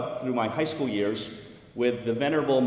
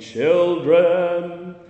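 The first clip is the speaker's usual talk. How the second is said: very loud, thundering, booming, drawn-out delivery; 6 semitones higher, 9 dB louder than usual. Recalling how a man always began by calling out in church, retelling a big booming call. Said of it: "in his big booming voice".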